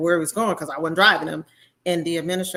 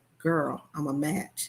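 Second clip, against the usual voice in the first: soft, hushed half-whisper under the breath; 6 dB quieter than usual. Retelling how she half-whispered to her friend downstairs, retelling a half-whisper. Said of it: "I'm whispering, whispering to my friend".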